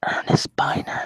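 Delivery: imitated whisper. Imagining Mark sitting over there: imitating someone whispering. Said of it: "sitting over there whispering".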